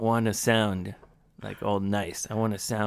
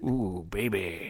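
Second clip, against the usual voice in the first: imitated deep dandy voice. Imitating the other speaker speaking English: imitating Yoshi's deeper dandy voice. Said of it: "誘うときにはディーパーな声になるってことな".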